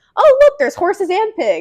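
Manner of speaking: very high, loud, animated, swooping exclamation. Retelling a man on the phone as police horses arrived, imitating someone speaking loudly. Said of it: "really loudly goes".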